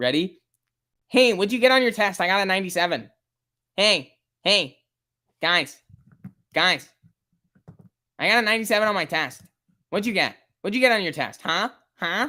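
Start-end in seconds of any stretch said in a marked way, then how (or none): 1.1-12.3 pushy, show-off, pitched-up, pestering bragging voice. Mimicking a viewer who just asked about buying shares: mocking imitation of a viewer. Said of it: "This is what you sound like".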